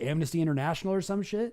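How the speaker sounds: ordinary delivery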